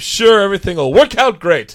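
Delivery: loud, noble adventuring hero's voice. Ending an improvised scene, speaking to his old companion, heroic voice. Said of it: "You can tell by my heroic voice".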